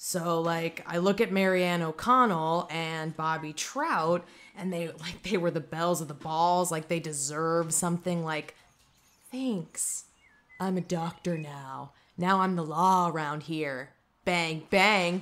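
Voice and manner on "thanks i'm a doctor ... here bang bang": sour, grudging, bitter resentment. Complaining about two people who now hold power: bitter. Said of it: "Do I sound bitter?".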